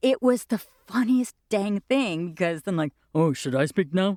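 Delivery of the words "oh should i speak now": put-on very deep bass voice. Imitating a friend playing Flute in a play: Steve Barney's bass voice. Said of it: "Steve had the bassest bass voice".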